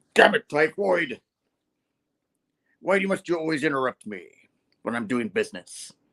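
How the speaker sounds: put-on angry, irritated, fed-up scolding tone. Retelling a comic scene where Kingpin gets mad: angry Kingpin voice. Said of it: "And he gets all mad".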